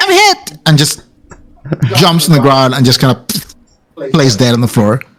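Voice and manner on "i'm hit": put-on squeaky, very high little kid voice. Voicing a kid hit by a squirt of water: voicing a kid. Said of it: "and he goes like".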